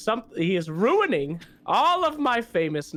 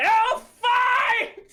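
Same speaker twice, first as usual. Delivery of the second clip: shrill, very high scream; 3 dB louder than usual. Acting out a character screaming to the sky: screaming into the heavens. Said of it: "I scream into the heavens".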